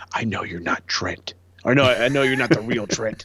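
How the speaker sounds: close, sly stage half-whisper. Retelling how one wrestler chokes out another: imitating Rocky Romero half-whispering. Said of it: "whispers in his ear".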